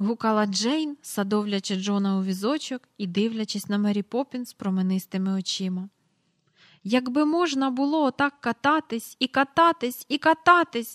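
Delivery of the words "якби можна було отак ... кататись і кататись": eager, high, ringing exclamation. A narrator reads a character's line after a long carousel ride: exclaimed. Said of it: "вигукнув Майкл".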